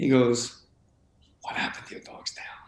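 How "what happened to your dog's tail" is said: hushed, breathy whisper right up close. Retelling how someone asked about the dog's missing tail: imitating a close whisper. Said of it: "whispered real close".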